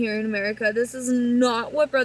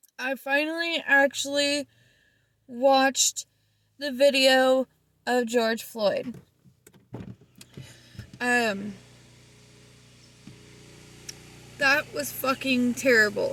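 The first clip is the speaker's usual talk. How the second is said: voice straining against crying. Talking to her viewers about a video she finally watched, holding back tears. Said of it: "trying not to cry".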